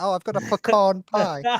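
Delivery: fake posh English accent, high and slow. Mocking how someone else sounds, in a put-on posh english accent. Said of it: "you sound like a fucking posh English person".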